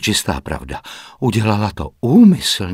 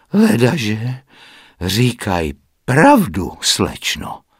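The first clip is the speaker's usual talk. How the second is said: slow, meaningful, knowing, pointed tone. Narrating a woman's reply to the young lady, said meaningfully. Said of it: "Partridge si odfrkla a pak významně pronesla".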